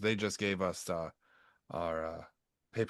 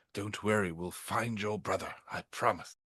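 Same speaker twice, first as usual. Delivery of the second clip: loud stage whisper. Walking over to Rain, whispering so the other person overhears: loud whisper. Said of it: "I'm going to whisper".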